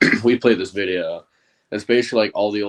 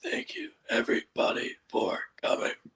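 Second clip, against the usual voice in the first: put-on lost voice, much higher, quieter; 8 dB quieter than usual. Retelling a charity event speech given the day after a game, imitating a voice that's gone. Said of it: "my voice was completely gone".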